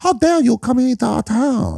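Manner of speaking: very high, slow, put-on American accent.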